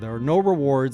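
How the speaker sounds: ordinary talk, nothing marked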